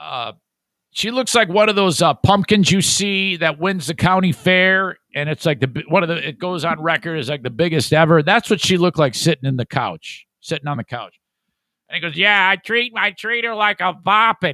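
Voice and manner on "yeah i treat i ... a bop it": really high-pitched, whiny voice. Retelling a joke a short man told: imitating a high whiny voice. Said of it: "He's got a real high, high, whiny voice".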